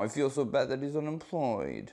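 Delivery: soft sympathy that comes out sarcastic. Imitating how a friend offers condolences: imitating a sarcastic condolence. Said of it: "you sound really sarcastic when you're sad".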